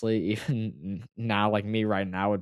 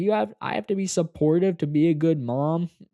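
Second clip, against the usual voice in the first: loud, high-pitched, put-on sharp comeback tone; 8 semitones higher, 6 dB louder than usual. Retelling mom's reply during an argument: imitating a loud retort.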